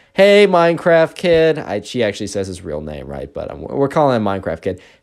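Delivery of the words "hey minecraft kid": put-on loud, high-pitched holler. Retelling a classmate loudly calling out to a boy: imitating a loud call. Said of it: "very loudly Eren's like".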